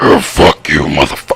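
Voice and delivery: very deep, dropped-down demonic rumble. Recalling a confrontation, doing how a man yelled, in Hector's demon voice. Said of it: "Hector's demon voice used to go".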